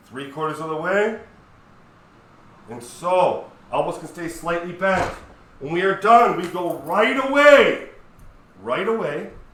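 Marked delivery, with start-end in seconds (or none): 5.5-9.3 loud, shouting fitness-instructor voice. Talking listeners through side raises with no music playing, shouting. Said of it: "I don't know why I'm shouting".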